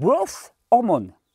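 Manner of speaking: American accent heavily tinged with Catalan. Explaining what GH stands for, in a Catalan-tinged American accent. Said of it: "avec un accent américain très catalan".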